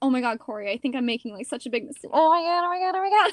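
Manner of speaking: frantic, fast babbling with rising panic. Retelling words to a boyfriend while waiting at an audition: retelling own panic. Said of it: "I'm freaking out".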